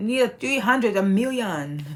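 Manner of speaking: put-on, fake Chinese accent. A YouTuber asking viewers to subscribe, in a fake Chinese accent. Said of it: "That's my fake Chinese accent".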